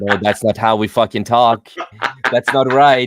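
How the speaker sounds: loud, annoyed, exasperated voice.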